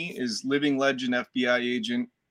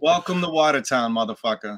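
put-on Boston-accented delivery; 4 dB louder than usual. Saying own line from a movie when asked: Boston accent. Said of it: "he had that Boston accent".

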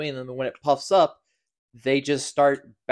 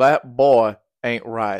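raised, heavy Southern drawl; 2 semitones lower, 5 dB louder than usual. Co-host asked to say the proposed segment title, doing Hank Hill's Southern accent. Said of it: "You got that Southern accent going".

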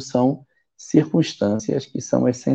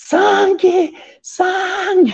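mock shrill, very high, loud outcry; 5 dB louder than usual. Retelling a friend waking on a night bus: imitating someone shouting. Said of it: "começa a gritar dentro do ônibus".

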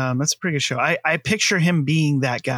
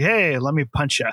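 mock grinning delivery, slower. Speaker mimics a terrible character who talks with a stupid grin; imitating a grinning guy. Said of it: "with this stupid little grin on his face".

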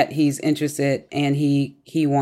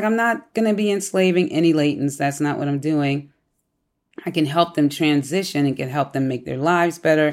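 normal talking voice

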